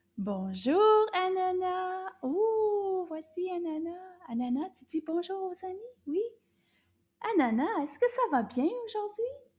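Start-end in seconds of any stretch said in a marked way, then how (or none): 0.2-2.1 slightly raised, a bit louder voice. Greeting the puppet again after asking for more volume: a little louder. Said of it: "A little bit louder".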